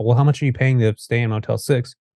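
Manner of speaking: ordinary talk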